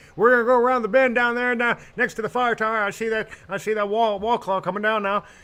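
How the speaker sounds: heavy, thick Southern drawl, very high pitched. Imitating a storm chaser heard on the line: thick Southern accent. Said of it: "that was a thick Southern accent".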